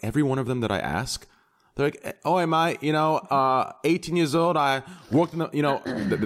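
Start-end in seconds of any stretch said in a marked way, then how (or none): 2.0-5.5 attempted, put-on Australian accent, pitched up. Imitating Australian players met in World of Warcraft: attempted Australian accent. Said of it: "that changed to a re-, to a, uh, southern accent".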